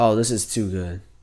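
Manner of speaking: ordinary delivery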